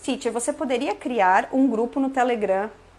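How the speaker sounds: ordinary talk, nothing marked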